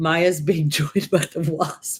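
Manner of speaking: giggling and laughing through the words. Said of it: "I suddenly got the giggles".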